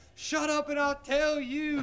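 play-acted, high, drawn-out screaming. Speaker retells a fight, acting out the listener screaming: retelling a scream. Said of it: "you started screaming".

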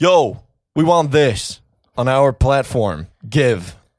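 loud, pushy executive voice. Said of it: "Netflix just busts in like".

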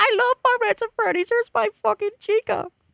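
very high, put-on little-kid voice. Mocking a piece of fan art by imitating a nine-year-old kid. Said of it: "this one nine-year-old kid's like".

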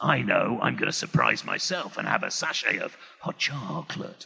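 very low, soft, raspy, creaky voice. Retelling talking to himself for the day in a Nicky Henson voice. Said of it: "talk to myself as Nicky Henson".

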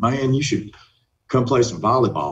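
put-on rural country accent. Recalling someone inviting him to play volleyball, the speaker quotes him: country accent. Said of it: "he's got this country accent".

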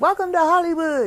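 mock, very high-pitched, loud yelled voice. Recounting arriving on a friend's street and calling out, retelling her own yell. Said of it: "So I yell".

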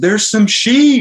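very high excited call. Retelling how Tyler suddenly spotted sheep: imitating Tyler's excited call. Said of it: "gets all excited".

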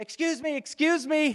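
urgent, high, loud calling out.

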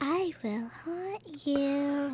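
slow, sinister, evil haunted doll voice. Voicing the evil doll inside an amulet: evil doll voice. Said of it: "evil doll inside of evil amulet".

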